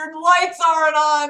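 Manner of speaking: high, screamed, loud call-out. Retelling calling out to a passing fire truck at night: retelling a scream. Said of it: "so I screamed".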